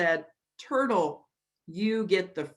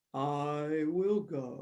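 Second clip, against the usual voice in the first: low, slow, steady, drawn-out voice; 5 semitones lower, 6 dB quieter than usual. Narrating a story, Turtle volunteers after everyone is disappointed: low, slow Turtle voice. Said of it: "heard a low, slow voice".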